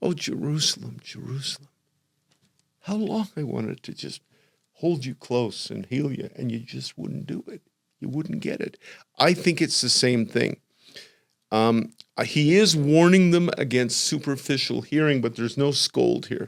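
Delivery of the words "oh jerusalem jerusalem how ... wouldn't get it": soft, grieving, tearful voice. Retelling words spoken while looking down on jerusalem, imitating a tearful voice. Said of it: "You can hear the tears in his voice".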